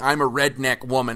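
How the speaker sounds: normal talking voice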